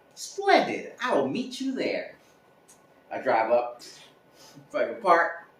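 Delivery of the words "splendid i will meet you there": put-on, switched-up voice, higher in pitch.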